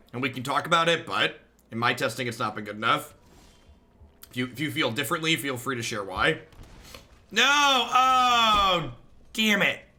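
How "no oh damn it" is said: high, slow, dragged-out yell. Speaker clicks too fast while talking to chat: yelling. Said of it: "I'm yelling".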